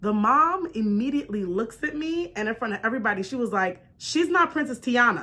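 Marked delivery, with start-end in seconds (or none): 4.0-5.2 curt, sharp, snippy tone with some spice. Retelling a mom's correction in front of everybody: imitating a sharp retort. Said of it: "she said it with a little spice on it".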